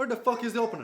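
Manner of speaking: put-on loud, high drunken shouting yell. In a drinking scene at a table, demanding the bottle opener: yelling. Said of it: "you don't have to yell".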